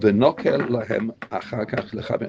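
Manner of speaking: ordinary talk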